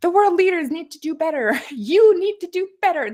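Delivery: high-pitched, loud tantrum-style voice. Mocking a speech's wording by imitating Greta Thunberg: bad Greta Thunberg impression. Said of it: "This is how she talks".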